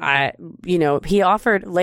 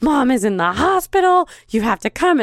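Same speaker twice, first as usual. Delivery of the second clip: hysterical, overwrought, high-pitched pleading; 6 semitones higher than usual. Retelling a sister's staged emergency call: imitating sister acting hysterical. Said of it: "she's, like, hysterical".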